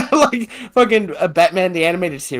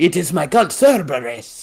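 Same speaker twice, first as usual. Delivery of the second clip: put-on Transylvanian Spanish accent. Acting out a vampire party member's lines: Vincent as a Transylvanian Spaniard. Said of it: "like a Transylvanian Spaniard".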